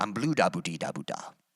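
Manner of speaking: sci-fi made-up alien-language gibberish babble. Showing how a phrase sounds said this way: Star Wars alien gibberish. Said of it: "sounds like an alien from Star Wars".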